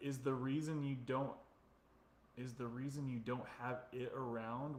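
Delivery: ordinary talk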